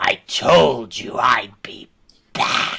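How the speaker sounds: very slow, drawn-out words, blended with undead creature voice. Voicing Rahadin drawing his scimitar: Rahadin's voice mixed with undead creature. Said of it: "in a voice that sounds part like Rahadin's voice".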